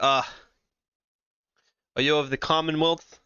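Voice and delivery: classy, courtly, refined noble gentleman voice. Voicing a classy noble man in a button-up shirt: classy noble gentleman voice. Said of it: "He's like".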